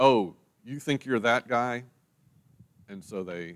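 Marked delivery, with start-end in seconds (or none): none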